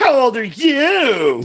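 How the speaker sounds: little bratty voice with "you" drawn out. Retelling how she answered his question, in a little bratty Cecile voice. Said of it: "she gets this little bratty voice".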